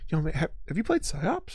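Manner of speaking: speaking in hushed tones. Imitating players who recommend a game: imitating someone in hushed tones. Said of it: "in hushed tones".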